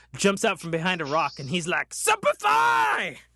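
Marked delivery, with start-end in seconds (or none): 1.9-3.1 very high, loud battle-cry yell. Retelling a kid jumping out from behind a rock, imitating a kid shouting. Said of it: "he was shouting it".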